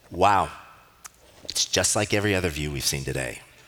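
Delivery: mock, extremely sarcastic teenage voice. Telling how a teenage daughter answered her mom's invitation; imitating a sarcastic teen. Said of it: "in the most sarcastic tone I've probably ever heard says".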